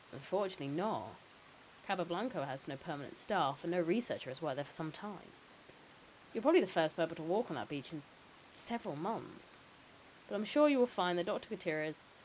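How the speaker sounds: usual speaking voice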